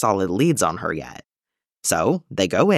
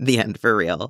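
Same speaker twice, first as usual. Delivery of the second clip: plain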